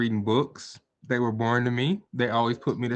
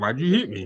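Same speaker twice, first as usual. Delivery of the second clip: play-acted dim, blank, unbothered tone. Imitating someone who does not react when hit, mock deadpan reply. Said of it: "would not react to getting hit upside the head".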